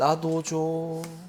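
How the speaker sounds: soft, eerie, spooky ghost voice. Explaining a case, acting out what person A says: ghost voice. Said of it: "귀신 목소리가 들려야 됩니다".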